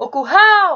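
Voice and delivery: called out, stressed and lengthened ral in curral. Finding the stressed syllable by calling like a friend: called out, stretching ral. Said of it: "Percebam que eu me alonguei mais na última sílaba, no hal".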